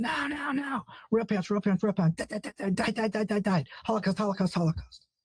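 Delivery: shrill screaming, every word repeated over and over. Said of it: "everything he screams is in sixes".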